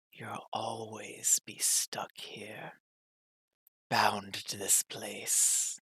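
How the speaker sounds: very quiet, breathy whisper. Narrator voices a voice heard inside the listener's head, whispering. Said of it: "a whisper".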